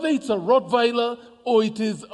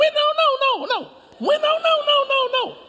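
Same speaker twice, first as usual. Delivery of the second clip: very high, shrill, yappy little dog voice. Imitating a small dog barking from under a car: shrill yapping dog voice. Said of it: "it's a shrill voice".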